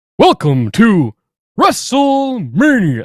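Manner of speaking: very high, loud, swooping, deliberately bad ring-announcer voice. Talking about a classic wrestling announcer, trying a bad Howard Finkel impression. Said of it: "And that was a horrible imitation".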